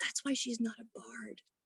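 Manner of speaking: very quiet whispered aside under the breath. Protecting a player character and telling another character: whispering. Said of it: "just whisper".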